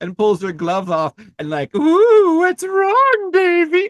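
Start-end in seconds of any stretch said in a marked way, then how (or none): 1.8-3.9 very high, very drawn-out, slow, taunting witch voice. Retelling how the villain taunts the kid: imitating a creepy villain taunting. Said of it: "candy house witch".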